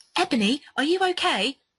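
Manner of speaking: high, automated, recorded test-line announcer voice. Reading a story aloud, the speaker voices Bloody Mary addressing Ebony, Bloody Mary voice. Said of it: "sounded like the Skype echo test".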